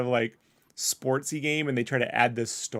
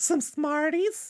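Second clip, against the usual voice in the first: put-on creepy old man voice, higher. Imitating a game character who sounded like the Family Guy old man: imitating the Family Guy old man. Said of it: "the old man from Family Guy who's always trying".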